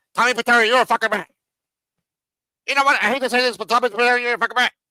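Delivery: rapid-fire delivery. Retelling a man's accusation the way he said it, imitating double-speed delivery. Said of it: "he said it like in the two times fast".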